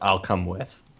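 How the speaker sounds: whispering. Voicing a character agreeing to come along: whispering.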